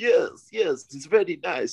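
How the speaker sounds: put-on comic Kazakh-style accent, high and slow. Retelling sparring partner Vladimir's party piece; Borat impression. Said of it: "his party piece was speaking like Borat".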